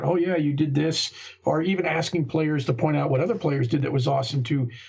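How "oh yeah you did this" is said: ordinary delivery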